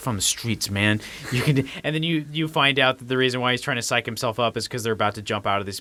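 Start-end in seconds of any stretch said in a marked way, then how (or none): 0.0-1.7 muttered, mumbling delivery. Retelling a movie scene where a character psychs himself up: imitating Roman mumbling to himself. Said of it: "he's sitting there mumbling to himself".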